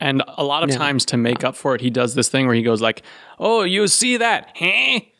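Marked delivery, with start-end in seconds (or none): 3.4-5.0 put-on very slow, high-pitched, drawn-out, poor Mexican accent. Show how a performer plays a different person, imitating his not-so-great mexican accent. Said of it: "he doesn't do the greatest Mexican accent".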